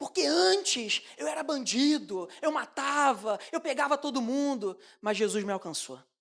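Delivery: proud, boastful, bragging churchy delivery. Speaker imitates a person giving testimony in church, mock-boastful testimony. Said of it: "Ele fala com a boca cheia".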